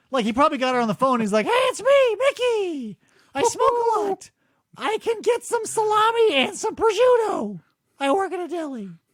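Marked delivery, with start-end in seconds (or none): 1.4-8.9 squeaked out, high-pitched and slow. Imitating a deli worker on the phone: throat cancer Mickey Mouse voice. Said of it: "throat cancer Mickey Mouse".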